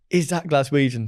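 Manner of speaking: ordinary delivery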